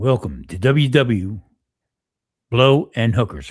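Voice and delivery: radio announcer voice, on-air host delivery. Urged to turn on the voice, opening a pretend radio show: radio voice. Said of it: "Turn on the voice".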